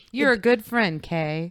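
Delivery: flat, energyless put-on voice. Quoting another line: imitating a flat, energyless voice. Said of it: "I can't infuse my voice with any energy".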